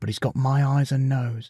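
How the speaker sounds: ordinary delivery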